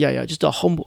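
English accent attempted, then abandoned halfway.

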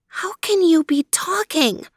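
half-whispered, pitched very high. A girl hears her companion speak human words for the first time; half-whispered. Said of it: "she whispered".

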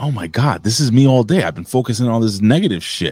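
normal talking voice

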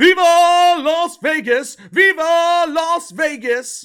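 very high, very loud, shrill, drawn-out banshee shriek. Mocking a player screaming on stage before a global TV audience, imitating Travis Swiffer screaming. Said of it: "starts screaming like a fucking banshee".

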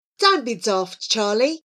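ordinary delivery, nothing marked

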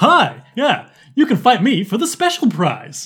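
happy, upbeat principal voice. A player voices a principal challenging another player for a prize, happy principal voice. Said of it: "He's meant to be a happy principal".

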